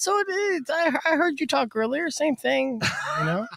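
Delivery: dejected, hurt tone. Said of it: "his voice gets higher when he gets sadder".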